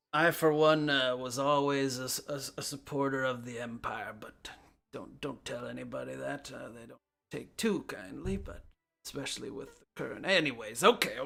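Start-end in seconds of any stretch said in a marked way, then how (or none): 0.1-10.2 put-on elderly man's voice. Game narrator voicing an older bearded man talking to the player, older man voice. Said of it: "kind of an older bearded man greets you".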